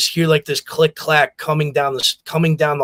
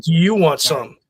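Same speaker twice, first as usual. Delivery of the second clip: put-on menacing tone. Retelling the mother staring down the coach: imitating mother's menacing threat. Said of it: "Just looked at him dead in the eye and said".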